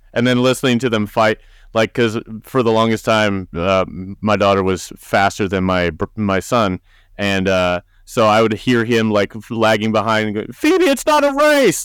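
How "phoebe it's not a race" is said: very high, screaming yell. Retelling how a son, lagging behind, yelled at his sister: imitating someone screaming. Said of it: "just screaming at her the whole time".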